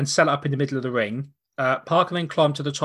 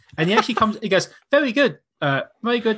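ordinary delivery

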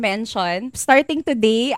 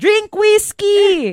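mock, sudden, very high shouted blurt; 10 semitones higher, 3 dB louder than usual. Speaker retells blurting out an answer to someone's question; retelling a shout. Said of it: "Sumigaw ako".

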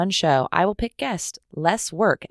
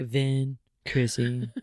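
play-acted low, toneless, level flat monotone; 5 semitones lower, 5 dB quieter than usual. Podcast host recalls saying the co-hosts' names, imitating own flat delivery. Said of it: "I sounded really flat when I was saying their names".

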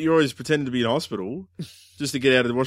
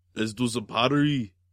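put-on Austrian accent. Showing something new to say in an Arnie voice. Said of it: "go do Arnie voice".

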